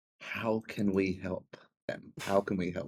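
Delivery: quiet, hushed, half-whispered aside. Speaking to another character in the scene, half-whispering. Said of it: "I whisper to Charlie".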